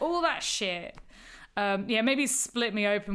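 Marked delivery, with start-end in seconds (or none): none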